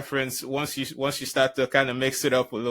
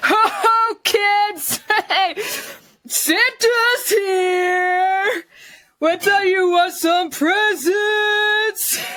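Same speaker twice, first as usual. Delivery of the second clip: put-on drunk voice, much higher; 5 dB louder than usual. Performing an alcoholic Santa greeting kids, drunk Santa Claus voice. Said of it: "her performance of alcoholic Santa".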